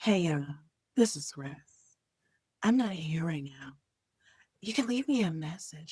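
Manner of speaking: very low, put-on sexy, seductive voice. Recalling the voicemail greeting he recorded for Emma; put-on sexy voice. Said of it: "I put on my sexy voice".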